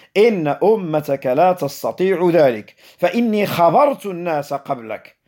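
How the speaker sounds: ordinary talk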